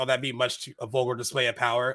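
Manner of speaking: ordinary talk, nothing marked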